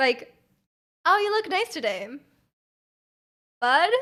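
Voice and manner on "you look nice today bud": long, awkward pause before the word "bud". Joking about compliments with a platonic modifier: long pause before bud. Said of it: "you put a really long pause between the compliment and the platonic modifier".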